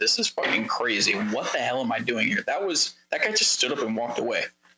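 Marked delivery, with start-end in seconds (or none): 0.0-2.4 quiet mumbling to oneself. Retelling talking out loud alone in a room: imitating own mumbling to himself. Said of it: "mumbling to myself".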